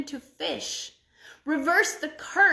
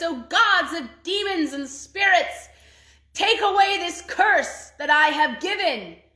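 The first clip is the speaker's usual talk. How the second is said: dreadful, terrible, loud cry; 4 semitones higher, 6 dB louder than usual. A woman throws water about the king's room and cries out: terrible voice. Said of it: "she cried out in a terrible voice".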